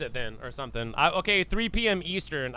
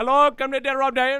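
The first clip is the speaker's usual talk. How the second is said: put-on raised, pitched-up voice with Indian accent; 8 semitones higher, 8 dB louder than usual. Imitating a phone caller from India: imitating a caller from India. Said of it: "It's probably an Indian from frickin' India, and they'd be like".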